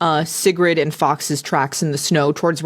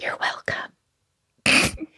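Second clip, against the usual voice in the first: hushed, whispered voice. Whispering to a stabilized ally in character: whispering. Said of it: "And I whisper".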